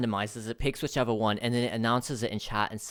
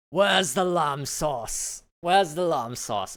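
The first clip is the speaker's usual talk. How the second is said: put-on British accent, pitched higher; 5 semitones higher than usual. Speaker tries a British accent to quote Gordon Ramsay: Gordon Ramsay impression. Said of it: "he's like British".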